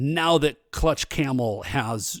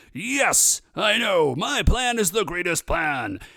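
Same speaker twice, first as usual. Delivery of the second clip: high, slow, pitched-up announcing voice; 5 semitones higher than usual. Retelling a scene, voicing Champion Durago: Champion Durago announcing voice. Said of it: "always sound like he is announcing something".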